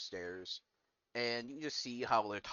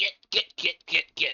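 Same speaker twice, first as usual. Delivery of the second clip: put-on shrill, very loud, high old woman's yell; 8 semitones higher, 12 dB louder than usual. Game master voices an old woman hitting a man with a broom, old woman yelling. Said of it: "she yells".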